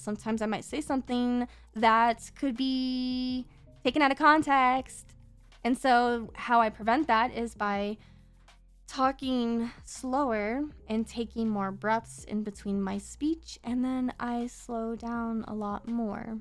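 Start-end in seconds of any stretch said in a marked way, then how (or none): 0.0-5.0 rapid run-on speech, "be" stretched. Showing how fast speech sounds, talking really fast. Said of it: "if I talk really fast like this".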